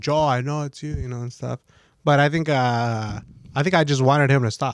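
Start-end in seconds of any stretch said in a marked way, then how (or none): 0.0-0.9 mock accusing call-out, kept small and mild. Retelling a prank from the other side of a door: imitating own yelling.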